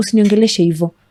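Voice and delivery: ordinary talk, nothing marked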